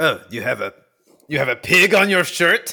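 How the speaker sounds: attempted French accent. Imagining what belgian people will say about his shirt, in an attempted french accent. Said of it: "Was that your attempt at a French accent".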